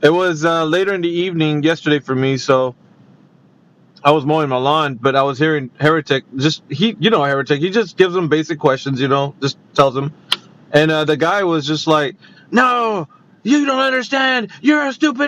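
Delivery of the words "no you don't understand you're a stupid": very high, irate, frustrated furious shouting. Speaker retells a guy going off and screaming, imitating a furious shout. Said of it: "really getting frustrated and angry".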